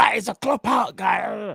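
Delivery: slow, drawn-out, shouted, mocking jeer.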